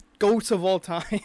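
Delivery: slow laughing delivery.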